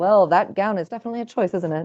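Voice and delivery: ordinary talk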